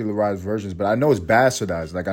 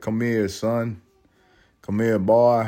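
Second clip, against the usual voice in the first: put-on slow, old Southern accent.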